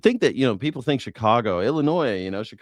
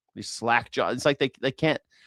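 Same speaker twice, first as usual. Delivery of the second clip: plain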